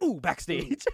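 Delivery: ooh said very fast and short, then onward. Imitating a wrestling interviewer who does the ooh really quick. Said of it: "he does it really quick".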